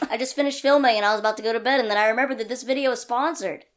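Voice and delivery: rushed, rapid-fire. Video maker remembering the sponsor right before bed, very fast. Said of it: "I said that really fast".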